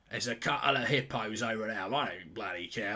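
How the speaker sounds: put-on Australian accent, nature-documentary narration style. Doing a mock nature documentary commentary: put-on Australian accent. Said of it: "I've gone Australian as well".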